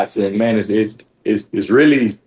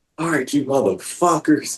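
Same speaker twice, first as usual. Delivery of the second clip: reined-in, screamed drill sergeant yell; 4 semitones higher, 5 dB quieter than usual. Retelling the drill sergeant's order as the bus stops: imitating drill sergeant screaming. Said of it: "And they just started screaming".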